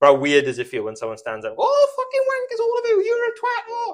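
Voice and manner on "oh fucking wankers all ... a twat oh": very high, loud, shrieked character voice. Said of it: "In the Norman voice".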